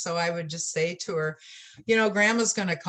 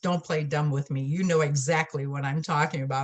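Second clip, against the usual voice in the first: put-on stern man voice. Retelling what a man said to her at his office: imitating a stern man. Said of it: "just real stern".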